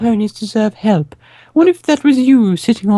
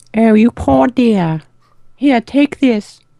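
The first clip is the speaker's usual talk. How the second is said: put-on regal British voice. Voicing a kind lady handing over a bag: Queen of England voice. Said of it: "It's the Queen of England".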